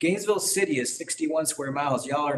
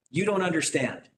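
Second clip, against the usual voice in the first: mock yelling out; 2 semitones higher than usual. Retelling what the tax assessor yelled out at him, retelling a yell. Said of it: "she just yells out".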